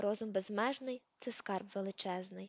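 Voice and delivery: ordinary delivery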